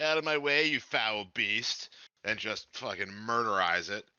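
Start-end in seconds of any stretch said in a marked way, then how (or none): 0.0-1.9 jeering, derisive, mocking, taunting tone. A game character looks at the vampire guy and speaks before attacking, mocking. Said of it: "I mockingly say".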